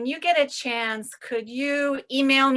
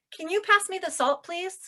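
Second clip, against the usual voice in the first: friendly, polite voice, pitched up and quick; 6 semitones higher than usual. Demonstrating a polite request using 'can', said nicely. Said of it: "if I say it nicely".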